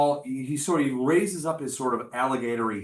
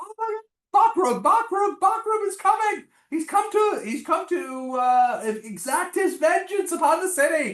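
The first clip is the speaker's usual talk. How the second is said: very high, drawn-out, terrified, panicked cry; 3 dB louder than usual. Voicing people in front as the sea monster approaches: panicked townsperson. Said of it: "you hear the people in front going".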